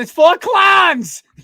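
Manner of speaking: Yinzer Pittsburgh accent. Calling the three ring circus full of clowns, in hardest Yinzer accent. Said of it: "I say that with the hardest Yinzer accent possible".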